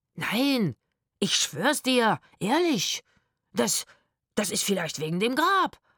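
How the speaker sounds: stammering, stuttering, tripping over each broken-up word. A narrator reads a man's denial to a woman accusing him, stuttering. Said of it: "stotterte der Mann".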